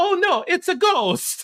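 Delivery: really bad put-on Italian accent, very high and loud. Watching a horror movie with your daughter, joking in a really bad italian accent. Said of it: "in a really bad Italian accent".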